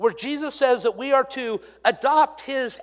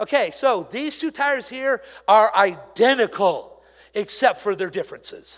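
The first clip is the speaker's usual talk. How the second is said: ordinary talk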